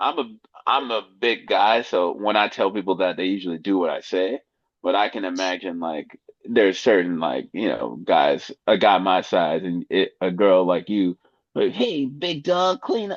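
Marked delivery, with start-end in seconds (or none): 11.7-13.2 put-on shrill, high-pitched girl's voice. Acting out a woman telling a big guy to clean up: Jenny impersonation. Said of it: "That's my Jenny impersonation".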